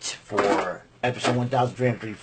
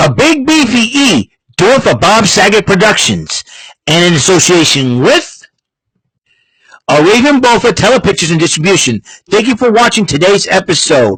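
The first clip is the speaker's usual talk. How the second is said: put-on announcer voice, higher and louder; 8 semitones higher, 11 dB louder than usual. Closing the episode in the role of the announcer: announcer voice. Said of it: "Mister Announcer, take us home".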